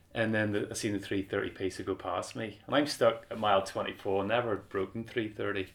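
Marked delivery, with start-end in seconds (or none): none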